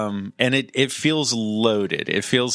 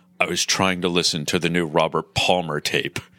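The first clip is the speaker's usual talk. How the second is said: low, inner-monologue movie voiceover narrator voice; 6 semitones lower than usual. Quoting a movie character's inner monologue, in a movie narrator voice. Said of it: "the narrator voice, he goes".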